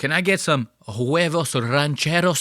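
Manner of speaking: mock, fake, put-on Spanish accent. Mocking customers at a mexican restaurant, doing a put-on spanish accent.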